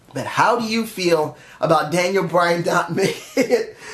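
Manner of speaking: words spoken through a laugh.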